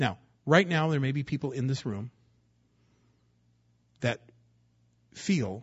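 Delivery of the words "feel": leaning on the word feel. Speaking to the people in this room, stressing the word feel. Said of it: "I emphasize the word feel".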